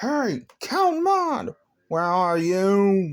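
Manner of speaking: very angry, high pitched, "you" held long. Telling a story, a character bursts through the door calling someone: very angry tone. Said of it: "In a very, very angry tone".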